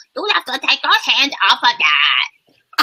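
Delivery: high, mocking, taunting toddler voice, parroting. Retelling how a two-year-old copies a parent's scolding: imitating a mocking toddler. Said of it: "He mocks me".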